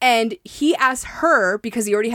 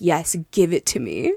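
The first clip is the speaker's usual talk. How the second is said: play-acted seductive, sultry, low, sexy tone; 6 semitones lower than usual. Retelling what he said during the scene: imitating a sexy tone. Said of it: "in the most sexy tone I've ever heard".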